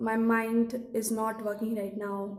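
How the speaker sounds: ordinary talk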